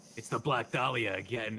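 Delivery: low, hard-boiled noir detective voice. Acting out Pikachu smoking over a dead body: Pikachu as noir detective. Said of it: "he's, like, smoking a cigarette, and he just goes".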